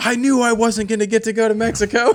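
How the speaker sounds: very high, shrill, pissed-off griping. Speaker retelling a phone call where she announced her pregnancy, imitating her pissed-off complaint. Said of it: "she was like pissed about it".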